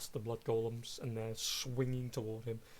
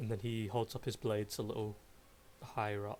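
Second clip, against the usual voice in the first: plain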